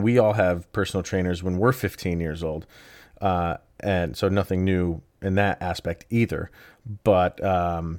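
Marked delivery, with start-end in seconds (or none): none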